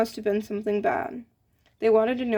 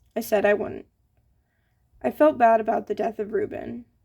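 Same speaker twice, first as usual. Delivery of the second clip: usual speaking voice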